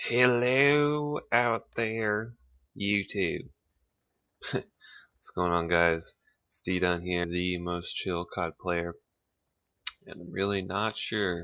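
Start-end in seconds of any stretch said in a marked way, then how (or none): 0.0-8.9 hokey put-on rural Southern drawl, drawn-out hello. YouTuber doing his gameplay video intro in a redneck voice. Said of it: "do my intro in a redneck voice".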